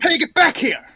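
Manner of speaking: loud, high-pitched shout. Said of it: "Is what I shout".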